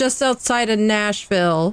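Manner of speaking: drawn-out voice calling out across a distance. Voicing a character calling out across a diner table: shouting across the table.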